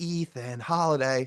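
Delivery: put-on whispering. Retelling filming a vlog in a quiet room: retelling a whisper. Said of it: "we have to whisper in that room".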